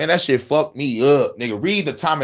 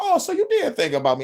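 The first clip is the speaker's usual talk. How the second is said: very high mock giggling through the words; 11 semitones higher than usual. Retelling a scene where a tied-up villain laughs: imitating Joker laughing while talking. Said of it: "the motherfucker laughing like".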